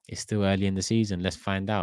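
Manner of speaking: ordinary talk, nothing marked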